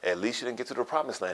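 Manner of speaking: ordinary talk, nothing marked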